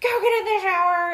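loud, high-pitched shouted yell. Retelling being yelled at by someone afterwards: retelling a yell. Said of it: "yelling at me".

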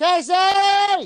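screaming. Calling out to another speaker whose connection keeps breaking up: screaming. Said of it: "I've been screaming like that for a minute now".

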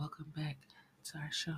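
mock ASMR-style voice. Welcoming listeners back to the show: put-on asmr voice. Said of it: "you get your A S M R going on".

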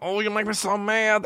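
put-on very high, squeaky, funny little kid voice. Speaker imitating a cousin's saying from when he was younger: imitating cousin's funny little voice. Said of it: "he had a funny little voice".

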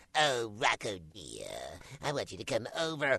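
swooping, sing-song cartoon voice with pitch swinging widely. Retelling a voice session where Charlie Adler was going: imitating Charlie Adler. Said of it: "there was Charlie Adler going".

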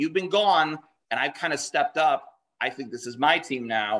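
ordinary talk

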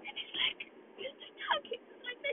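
very quiet, tearful, hushed crying whisper. Recalling crying over a lost baby, the speaker demonstrates a quiet crying voice. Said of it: "your voice goes quiet".

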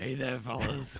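low, husky, smoky woman's voice. Imitating a woman who has lost her voice: husky smoky voice. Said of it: "smoky voice".

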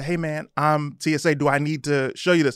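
ordinary talk, nothing marked

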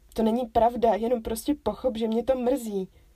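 indignant, stung, offended tone. Told she is contradicting herself, she objects to him, offended protest. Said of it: "Uraženě se ohradila".

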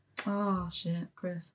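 thoroughly let-down, disappointed outburst. Reacting to another speaker's score guess: disappointed. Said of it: "What is that disappointment in your voice?".

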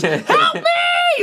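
put-on very high, top-of-the-lungs shriek. Retelling a wife on the floor screaming for help: imitating a woman screaming for help. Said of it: "screaming at the top of her lungs".

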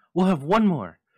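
triumphant cry, very high and loud. Narrator reads a woman answering a man's fierce question, crying triumphantly. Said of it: "she cried triumphantly".

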